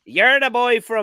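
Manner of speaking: fake Irish old woman accent. Retelling how a table of grannies stopped them, voicing the grannies: put-on irish accent. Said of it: "I'm putting on an Irish accent for some reason".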